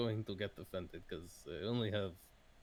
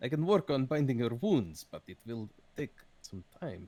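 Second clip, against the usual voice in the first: loud, rusty, half-remembered put-on Russian accent; 3 semitones higher, 6 dB louder than usual. Speaker retries a line after noting he forgot his Russian accent, Russian accent. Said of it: "I've completely forgotten my Russian accent".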